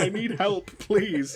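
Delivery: mock uncontrollable laughing. Retelling own words from lying on the floor: imitating laughing helplessly. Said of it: "lying on the floor pissing myself laughing".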